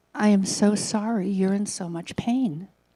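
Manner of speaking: gentle tone. Retelling what the speaker said to a woman yelling at them; retelling gentle words. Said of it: "very gently put my hand on her arm".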